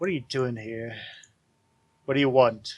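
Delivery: hushed whisper. Taking someone aside where nobody can hear, a character speaks, whispering. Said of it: "he whispers to you".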